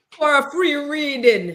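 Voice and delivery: put-on Jamaican accent. Finishing the other speaker's psychic-hotline line: imitating a Jamaican accent. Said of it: "my Jamaican accent".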